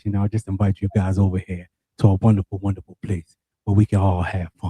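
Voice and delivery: deep, low voice. Inviting the ladies over to Ladies Love Anime: deep voice. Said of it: "my deep voice".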